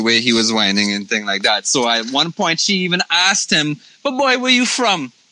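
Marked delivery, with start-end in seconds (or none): 4.0-5.1 Barbadian accent. Retelling a woman asking him where he's from, in a Bajan accent. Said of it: "With the Bajan accent".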